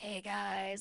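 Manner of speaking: raspy, scratchy, worn-out voice cutting in and out. Retelling greeting friends after one hour of sleep: imitating own raspy, deep voice. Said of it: "I was so raspy and so deep".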